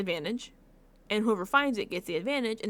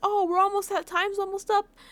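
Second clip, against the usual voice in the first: very high, loud shouted yell, acted out; 11 semitones higher, 5 dB louder than usual. Retelling how one player yells to call another back: imitating someone yelling. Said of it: "when he yells".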